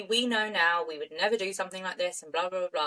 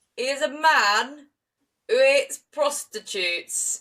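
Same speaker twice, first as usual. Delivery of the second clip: loud, drawn-out, put-on male Yorkshire accent; 4 semitones higher, 5 dB louder than usual. Imagining a police officer answering a journalist, in a Yorkshire accent. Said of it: "Was that a good Yorkshire accent?".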